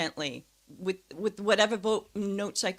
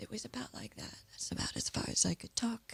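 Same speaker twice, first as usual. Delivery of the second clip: barely-there, very quiet, breathy, weak whispered voice; 11 dB quieter than usual. Showing the voice the speaker walked in with, recreating that past voice. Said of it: "I walked in with a voice like this".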